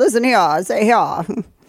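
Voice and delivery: put-on cartoon barnyard rooster accent. Show what accent you just heard by doing a Foghorn Leghorn voice. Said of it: "It is very Foghorn Leghorn".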